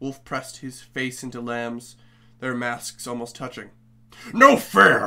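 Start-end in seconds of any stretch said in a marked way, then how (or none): 4.3-5.1 very loud, furious howling outburst of rage. The wolf protests the lamb's win, howled with fury. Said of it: "he howled with fury".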